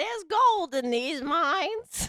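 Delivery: put-on old lady voice. Trying out a prospector line that comes out in an old lady voice. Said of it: "That sounded more like an old lady".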